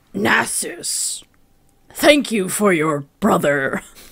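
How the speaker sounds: put-on slow, gravelly, echoing voice. Quoting a game character's line to his brother, imitating an echoey gravelly voice. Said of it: "It's echoey. It's gravelly".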